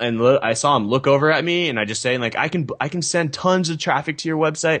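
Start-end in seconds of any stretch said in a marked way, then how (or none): 2.4-4.8 high, loud yelled delivery. Retelling pushing through a crowd to pitch a keynote speaker: retelling own yelling. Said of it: "And I just started yelling at him".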